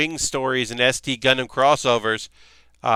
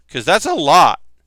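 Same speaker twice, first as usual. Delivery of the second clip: cracking, breaking voice; 3 semitones higher, 7 dB louder than usual. Talking about a game they love, voice cracking. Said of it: "My voice cracked there".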